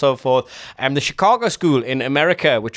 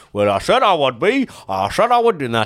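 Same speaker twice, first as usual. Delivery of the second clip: put-on Ashington accent. Retelling Jack Charlton quitting as Newcastle manager, in an Ashington-accent Jack Charlton impression. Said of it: "Ashington accent".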